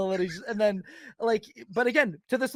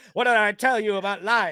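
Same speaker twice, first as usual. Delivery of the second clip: put-on mean drunk woman's voice, louder; 4 dB louder than usual. Describing a video, quoting the mom talking to her little girl, put-on mean drunk mom voice. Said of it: "the mom just sounds like this like mean alcoholic".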